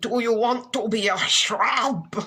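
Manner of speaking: put-on calling out in a German accent. Retelling how Hendrik kept calling out: imitating Hendrik's German accent. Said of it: "calling out in his German or whatever accent".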